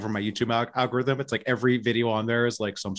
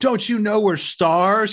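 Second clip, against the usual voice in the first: loud, high-pitched, drawn-out hollering yell; 10 semitones higher, 7 dB louder than usual. Retelling a scene from a documentary: imitating someone yelling. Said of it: "yelling at somebody".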